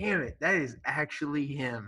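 ordinary talk

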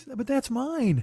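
soft, tiny little character voice. Retelling their inner voice on seeing the candy on their table, little guy voice. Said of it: "this little guy voice".

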